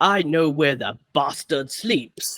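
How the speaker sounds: put-on British accent. Quoting a favorite line from the film in Keanu Reeves's accent. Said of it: "but his accent, my favorite is".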